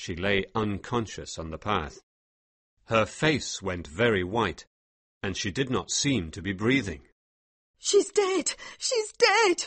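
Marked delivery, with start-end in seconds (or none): 7.8-9.7 very high, shocked, alarmed cry. A woman sees her companion fall and lie still, crying out. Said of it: "cried Mary".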